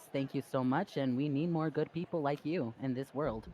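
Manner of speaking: mechanical, robot-like voice. Narrator voices Victoria bowing to Miss O'Day, in her robotic voice. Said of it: "says in her robotic voice".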